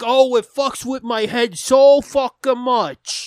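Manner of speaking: put-on Bronx or Brooklyn accent. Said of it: "talking like some fucking brain damaged dude from, like, the Bronx or Brooklyn".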